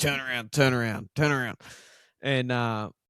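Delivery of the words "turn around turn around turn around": acted-out light, mild hollering, over and over. Retelling yelling at the border collie chasing the Triton: imitating own past yelling. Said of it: "yelling at him".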